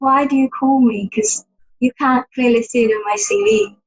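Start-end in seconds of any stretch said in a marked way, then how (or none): none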